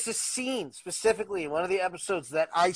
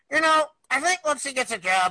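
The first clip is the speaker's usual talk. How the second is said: swooping, sing-song cartoon voice with big pitch swoops; 8 semitones higher, 5 dB louder than usual. Retelling what was heard while watching a show: Beavis voice. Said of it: "you just hear Beavis's voice go".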